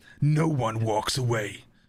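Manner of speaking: deep action movie trailer narrator voice. Reading the tagline for the movie American Siege, movie trailer voice. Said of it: "Am I doing the voice right?".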